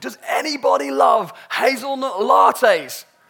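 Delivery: very loud, drawn-out top-of-the-lungs bellow. Retelling how he stood in the town crossroads holding a coffee, retelling a shout at top of lungs. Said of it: "at the top of his lungs started shouting".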